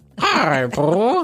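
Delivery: high fake Spanish accent. Co-hosts trying cartoon voices, one says hi to Pooh in a Tigger impression. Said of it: "Sound like a Spanish caterpillar".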